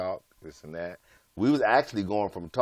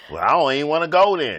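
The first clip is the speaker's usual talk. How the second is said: put-on snippy attitude voice, higher and louder; 7 semitones higher, 10 dB louder than usual. Acting out how a text message reads in his head: attitude voice. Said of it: "You're reading it in the attitude voice".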